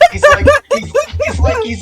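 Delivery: high, loud laughter while talking.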